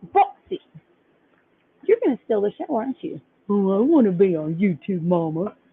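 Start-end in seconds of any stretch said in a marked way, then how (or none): 3.5-5.5 the dog's own talking voice. Filming the bulldog boxer mix, the owner speaks for the dog, voicing the dog. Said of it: "I give all my dogs voices too".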